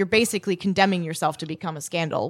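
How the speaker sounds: usual speaking voice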